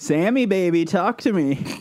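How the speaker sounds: high, schmoozing Hollywood-style voice. Opening the podcast, a host greets Sammy with a Hollywood vibe. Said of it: "a sort of Hollywood vibe at the start".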